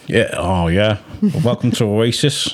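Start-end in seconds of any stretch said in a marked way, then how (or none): 1.2-2.5 slow, powerful put-on accent with a heavy drawl. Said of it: "I can't do the accent very well".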